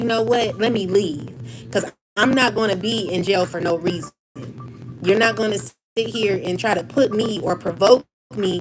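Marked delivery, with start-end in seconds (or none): none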